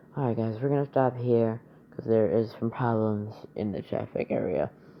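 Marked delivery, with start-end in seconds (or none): none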